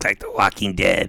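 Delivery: put-on little girl demon voice. Imitating a little girl from a movie: little girl demon voice. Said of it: "She's doing the little demon".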